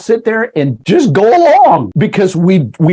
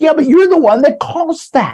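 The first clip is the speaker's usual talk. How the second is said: high-pitched, indignant mock yell. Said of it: "you're gonna yell at them".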